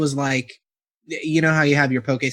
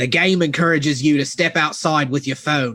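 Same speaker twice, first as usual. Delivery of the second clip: put-on Australian-sounding accent, slipped in. Reading a game description aloud, slipping into a put-on Australian accent. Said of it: "No, that's Australian".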